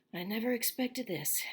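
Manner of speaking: suddenly troubled, uneasy, anxious voice. Reading a novel aloud, a man answers a question in a low, worried voice. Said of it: "he said in a low, worried voice".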